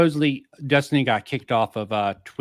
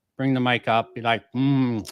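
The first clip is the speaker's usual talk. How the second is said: ordinary delivery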